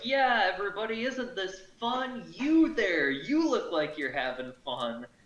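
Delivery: cheery, high, swooping shouted encouragement. Player in a tabletop game, his character cheering everyone on, shouting encouragement. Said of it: "I'm just shouting more words of encouragement".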